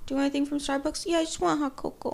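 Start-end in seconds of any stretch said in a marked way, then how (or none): 1.1-2.1 put-on annoying, childish man-child voice. Acting out a man wanting hot cocoa, in an annoying man-child voice. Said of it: "I just said it in a really annoying man-child voice".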